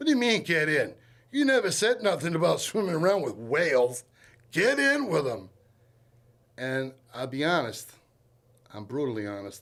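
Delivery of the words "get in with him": raised, high-pitched hollering. Retelling being told to get in the water: imitating someone yelling. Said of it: "He's yelling at me".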